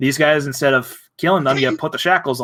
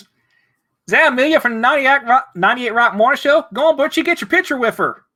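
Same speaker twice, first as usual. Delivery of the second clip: put-on Baltimore accent, very high-pitched; 11 semitones higher than usual. Showing the others what a Baltimore accent sounds like, Baltimore accent. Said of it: "That's a Baltimore accent".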